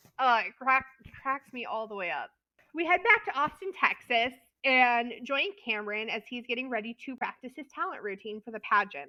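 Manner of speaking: usual speaking voice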